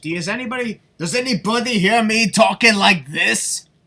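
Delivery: very loud, high put-on Scottish accent. Arguing that heritage doesn't change one's natural accent, in a scottish accent. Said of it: "I'm part Scottish".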